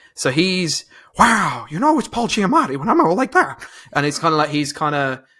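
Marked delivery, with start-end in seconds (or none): 1.2-3.7 pitched-up, light comic monster voice. Describing casting for a monster's voice: Paul Giamatti impression. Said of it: "I think that was a really good impression".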